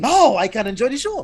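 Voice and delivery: very high, loud, delighted gushing. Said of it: "it was like".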